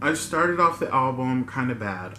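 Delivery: ordinary talk, nothing marked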